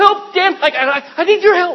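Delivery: very loud, panicked, frantic cry. Speaker acts out a flustered God calling to Dan for help: panicking voice. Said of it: "never panicking".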